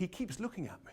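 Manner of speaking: high, soft, confiding whisper. Retelling what Nigel whispered during Prime Minister's Questions: imitating Nigel whispering. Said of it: "he whispers to me".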